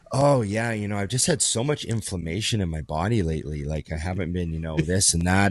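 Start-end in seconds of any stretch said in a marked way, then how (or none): none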